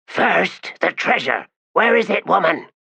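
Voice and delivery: very high-pitched, hissing voice. Reading a story aloud, voicing Torvald Nom's demand in a hissing voice. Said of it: "in a hissing voice demanded".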